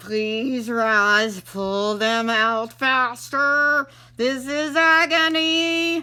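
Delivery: slow, through gritted teeth. The fox begs roz to pull the quills out faster, through gritted teeth. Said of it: "said through his teeth".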